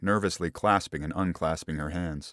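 ordinary delivery

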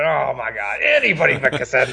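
animated, swooping, sing-song exclamation. Imagining the bowling alley worker's reaction: imitating the bowling alley guy. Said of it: "the bowling alley guy going".

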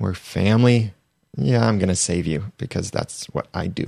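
put-on annoyed voice. Imitating Emma's thoughts about saving someone: imitating annoyed Emma. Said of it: "I think also a little bit slightly annoyed".

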